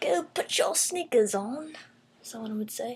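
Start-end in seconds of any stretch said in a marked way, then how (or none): 0.0-1.7 light, vague British accent, pitched up. Quoting how someone would tell you to put shoes on: kind of a British accent. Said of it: "that was kind of a British accent".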